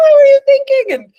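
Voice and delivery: shrill, very high upset voice. Retelling how a woman on a group bike ride scolded them, imitating an upset scolding. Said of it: "really upset".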